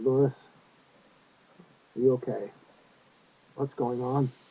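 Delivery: calm, low, even voice. Retelling speaking to someone who just threw books: calm, lowered voice. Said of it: "I spoke calmly".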